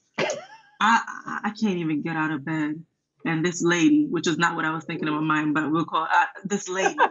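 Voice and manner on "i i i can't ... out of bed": slow, grumbling mutter, mostly under the breath. Retelling a reply to a counselor's advice to exercise: imitating mumbling under breath. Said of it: "I was mumbling under my breath".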